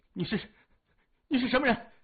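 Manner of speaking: trembling, quavering, tremulous voice. Surrounded by people, a man asks a young stranger who he is, trembling voice. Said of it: "颤声问".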